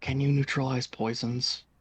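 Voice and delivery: soft, close whisper. Whispering a question into Transmuter's ear: whispering into someone's ear. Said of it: "I whisper into Transmuter's ear".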